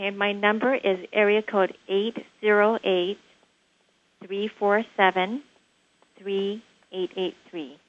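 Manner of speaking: very slow, spaced-out reading of a number.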